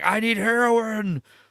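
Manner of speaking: mock panicked, freaking-out outburst. Retelling a show scene where a character needs heroin: imitating someone freaking out. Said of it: "freaking out".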